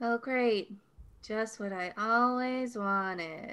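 sarcastic, not enthused. Character finds Travison instead of Lucas and greets him, sarcastic and unenthused. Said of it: "Don't sound so excited to see me".

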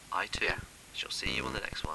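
very quiet, hushed, overly sad and somber. Trying out tones for the episode sign-off, overly sad sign-off. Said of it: "that's too sad now".

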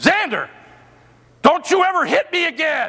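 overpowering, stern, very high-pitched voice. Retelling what they told a four-year-old who swatted them: retelling an overpowering scold. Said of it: "in that tone of voice".

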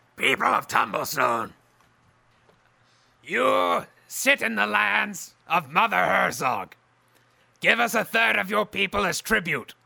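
loud, rough, snarling growl with rasp. A narrator voicing an unseen speaker to the north, in a growling, snarling voice. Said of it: "You hear a growling, snarling voice say".

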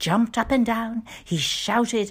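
plain

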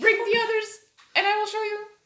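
tiny, squeaky squirrel voice. Telling a story about a squirrel, a speaker voices the squirrel: squirrel accent. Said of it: "imitate the squirrel accent".

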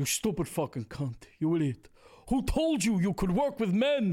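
high-pitched, theatrical stage-actor delivery. Asked to give a bit of Ricky Roma, perform it as an Al Pacino impression. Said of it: "Give you a bit?".

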